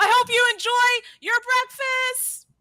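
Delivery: very high screamed call. Playing Yochul as someone hurries off: Yochul screaming. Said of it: "Yochul just screams".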